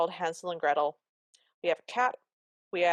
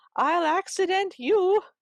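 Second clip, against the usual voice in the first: mock, very high, screeching scream; 12 semitones higher, 4 dB louder than usual. Retelling a story scene, voicing the stepmother's answer to Cinderella: retelling a scream. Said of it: "The stepmother screams back".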